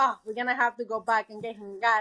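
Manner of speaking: ordinary talk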